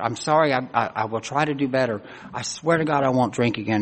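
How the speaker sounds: ordinary delivery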